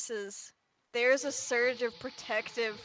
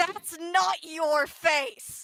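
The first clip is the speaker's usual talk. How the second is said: raging, loud, high roar; 5 semitones higher, 7 dB louder than usual. Narrating a game scene as she surges forward to yank the mask, roaring in her security voice. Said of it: "in her security voice, just roars".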